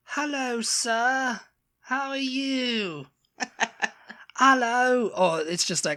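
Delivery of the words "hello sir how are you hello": fake generic British accent, very high and slow. Mocking how people practice the accent, the speaker does a generic fake British accent. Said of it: "when they're practicing their British accent".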